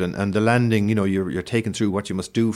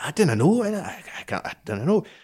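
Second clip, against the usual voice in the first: put-on Scottish accent, higher, much slower; 8 semitones higher than usual. Retelling a scottish colleague's reply to the speaker's question, scottish accent impression. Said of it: "That's a good Scottish accent".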